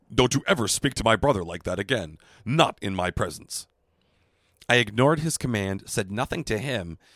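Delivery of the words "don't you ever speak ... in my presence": put-on gruff, rough warrior voice. Retelling how a man's brother angrily confronted the speaker: Worf impression. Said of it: "I'm just going to do Worf again".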